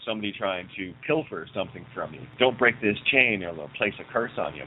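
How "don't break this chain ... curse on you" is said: usual speaking voice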